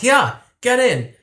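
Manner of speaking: acted very high-pitched shout. Retelling how a woman shouted from a car window to two women: imitating someone shouting. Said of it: "She rolls down the window and shouts".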